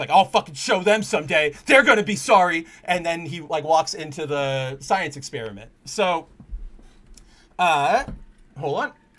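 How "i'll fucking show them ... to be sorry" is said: mock tearful, furious, loud angry crying. Retelling a comic scene of Peter Parker snubbed, imitating angry crying. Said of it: "he's crying, but it's, like, angry crying".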